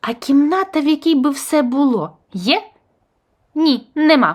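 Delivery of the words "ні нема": abrupt, curt, barking. A character answers another's question: barking. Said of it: "гаркнув недоштанько".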